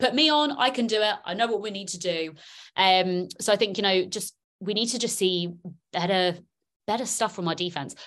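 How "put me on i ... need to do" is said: urgent screaming, held back. Retelling yelling at the TV as the defense falls apart: retelling own screaming. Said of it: "I'm just screaming at my T V".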